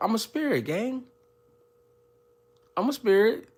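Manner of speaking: high, playful mock protest, teasing and light.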